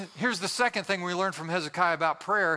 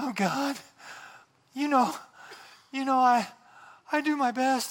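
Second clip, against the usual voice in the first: mock-pious, prayer-like intonation; 6 semitones higher than usual. Mocking people who manufacture emotion when praying, in a mock-pious prayer tone. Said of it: "Do you have a special pious prayer tone when you pray?".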